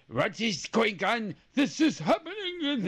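horrible, fake French accent, badly mangled. Retelling a story about Napoleon, quoting him in a horrible French accent. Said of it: "that was a horrible French accent".

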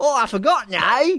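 put-on very high, thoroughly full all-out cockney accent. Quoting a favorite Bond one-liner to a co-host, do a cockney Bond impression. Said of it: "sounding completely cockney".

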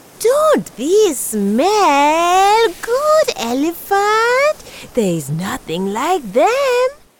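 exaggerated, high, tempting storybook voice, "smell" drawn out. Tortoise tempts the elephant by waving bean cakes at its trunk, exaggerated voice. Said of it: "Tortoise said with an exaggerated voice".

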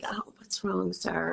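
soft, kind, gentle, concerned whisper. Retelling what the flight attendant whispered to the man: imitating a kind whisper. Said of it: "she whispered something, like, really kind".

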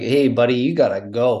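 put-on somewhat comic Newfoundland accent. Retelling how a woman's father tells the speaker to go, funny Newfoundland accent. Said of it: "he's from Newfoundland. And so he has kind of a funny accent".

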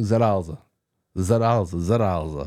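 put-on Italian accent. Recalling what Mike kept repeating years ago, Mike's slight Italian twang. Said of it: "putting a little bit of an Italian twang to it".

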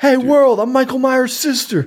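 shrill, very high, loud screaming. Retelling how a movie character announces her news: imitating Lori screaming. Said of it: "she's screaming".

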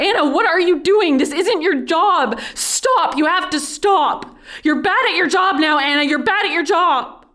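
very high put-on shout. Retelling a coworker yelling at the speaker: imitating someone yelling. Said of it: "He grabbed me in the arm and yelled".

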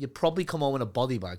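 ordinary talk, nothing marked

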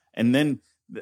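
plain

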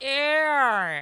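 odd, drawn-out Southern drawl. Imitating how someone says a name, southern drawl on Erin. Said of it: "he has a kind of a weird southern drawl every now and then. So it's like".

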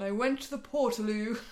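grand, put-on, dramatic theatrical reading voice. Asked by a co-speaker for a dramatic reading, the speaker answers in a mock dramatic reading voice. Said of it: "That's my dramatic voice".

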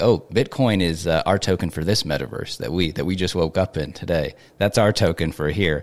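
ordinary delivery

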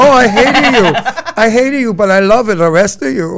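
put-on Ukrainian accent. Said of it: "she had an accent".

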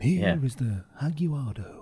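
very slow, drawn-out documentary narrator voice. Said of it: "Just need to do that voice".

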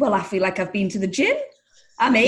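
usual speaking voice

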